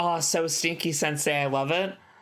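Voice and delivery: ordinary talk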